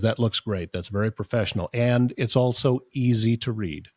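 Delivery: ordinary delivery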